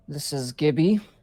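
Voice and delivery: deep-voiced character. Voicing a character answering a phone call: very deep voice. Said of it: "a very deep voice".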